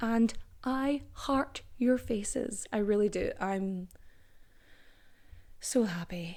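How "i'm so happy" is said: deeply sad, mournful, soft, saddest-sounding voice. Speaker praising the audience, saddest voice. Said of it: "She said in the saddest voice".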